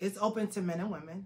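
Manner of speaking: audible steadying breaths, holding back tears, holding together.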